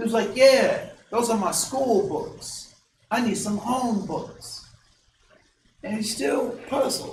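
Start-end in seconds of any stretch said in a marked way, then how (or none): 0.4-4.7 poorly done, put-on Mexican accent. Quoting a student asking the teacher for home books: bad mexican accent. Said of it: "he's doing like this bad Mexican accent".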